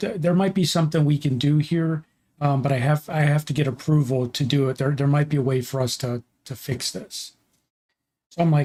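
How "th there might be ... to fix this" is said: normal talking voice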